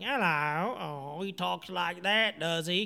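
gruff put-on London Cockney accent. Imitating how an actor talks in recent movies: Hugh Grant Cockney impression. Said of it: "Cockney actor. He's kinda like".

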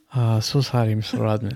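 put-on North Korean accent. Improvising a phone call, answering a caller who asks for Kim Jong-un, mock North Korean accent. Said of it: "Let me hear that with a gong".

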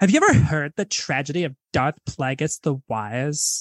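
put-on Valley Girl accent in a very deep voice. Speaker recounts someone saying Emperor Palpatine quotes, in a Valley Girl voice. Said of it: "like in like a Valley Girl".

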